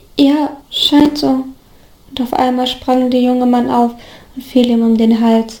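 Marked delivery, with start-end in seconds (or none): 0.2-1.5 cracked, brittle, breaking voice, much slower. Narrator reading a man answering a question, in a cracked voice. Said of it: "mit einem brüchigen".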